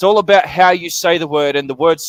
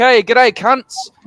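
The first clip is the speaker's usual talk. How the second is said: relaxed, matey, friendly voice with pitched-up tone; 6 semitones higher than usual. Showing how the word sounds among friends: friendly greeting. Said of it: "Mike's chilling out and I'm in a room full of my friends".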